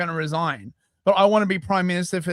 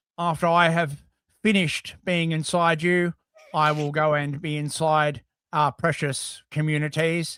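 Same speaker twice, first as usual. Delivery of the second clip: flat monotone, jaw still, mouth barely moving; 3 semitones lower than usual. Show how he would respond in horrific situations, in a monotone Keir Starmer impression. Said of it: "just do this like monotone where you don't m- actually move your mouth".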